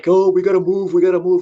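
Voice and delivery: high, loud, distressed sobbing lament. Retelling friends complaining about moving out: imitating friends crying. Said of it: "I have friends that are crying".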